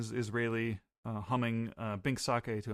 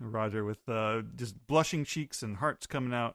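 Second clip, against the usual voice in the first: ordinary delivery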